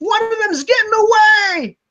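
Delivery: very high, stretched-out scream in a man's voice. Voicing a man who screams that one is escaping: man screaming. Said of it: "you hear a man scream".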